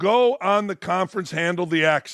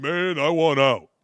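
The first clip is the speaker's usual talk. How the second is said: tough athlete voice, deep and slow; 4 semitones lower than usual. Showing listeners the player voice you developed with your wife, deeper player voice. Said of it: "It's a deeper kind of".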